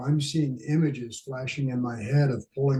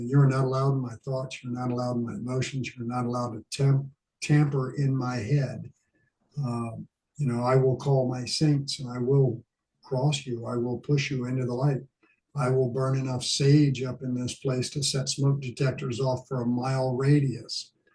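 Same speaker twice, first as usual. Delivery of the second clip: normal talking voice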